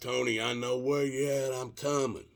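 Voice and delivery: mock yelling at full shout. Retelling calling out to someone whose arm he saw in his headlights, retelling a yell. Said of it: "I yell out".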